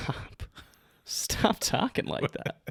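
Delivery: soft, whispered, mock reluctant tone. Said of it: "you're saying it like you want me to keep talking like that".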